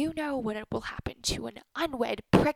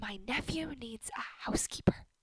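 whispered, much quieter; 8 dB quieter than usual. Miriam pulls Kazim aside, whispering. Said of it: "Miriam pulls Kazim aside and whispers".

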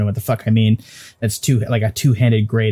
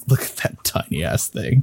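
chuckling giant voice, quieter; 4 dB quieter than usual. Player describes the giants reacting to the tiny companion, chuckling giant voice. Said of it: "the giants are like chuckling".

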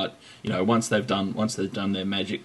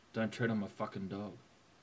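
put-on tough voice, much quieter; 16 dB quieter than usual. Showing how the quote should be delivered, in a mock-tough voice. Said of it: "I'll make them sound really, really tough".

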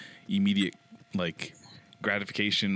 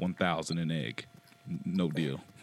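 put-on, slow, completely dead-serious delivery; 3 semitones lower than usual. Retelling a mother's reply to a money offer, imitating her serious tone. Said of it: "she was serious as fuck".

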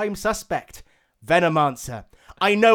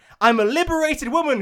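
ringing, high, cried-out exclamation; 8 semitones higher than usual. Crystal Maiden, dancing around Drow's prone body, cries out. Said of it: "cried Crystal Maiden".

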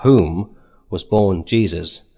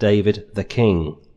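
stress landing on king. Reading a biblical genealogy aloud: stress on 'king'. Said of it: "I've deliberately highlighted that and wanted to put the emphasis on the king".

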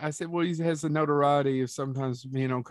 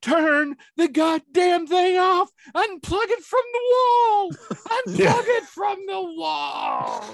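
drawn-out, very high screaming; 6 dB louder than usual. Recounting a scene from a movie; retelling a scream. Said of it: "He's screaming it".

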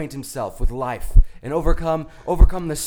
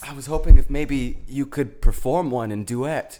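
plain

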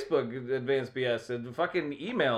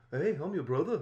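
bad, fake, put-on British accent; 2 semitones higher, 4 dB quieter than usual.

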